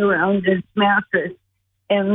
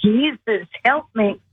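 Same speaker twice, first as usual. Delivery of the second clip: mock desperate, pleading crying out. Retelling finally calling out for help from the gurney: retelling own cry for help. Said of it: "I just finally cried out".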